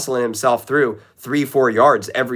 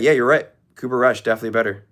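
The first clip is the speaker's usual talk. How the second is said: understated, deadpan, dry sarcasm. Showing the sarcasm style the speaker actually uses: deadpan sarcasm. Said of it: "I just say".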